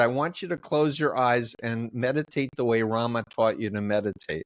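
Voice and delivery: ordinary talk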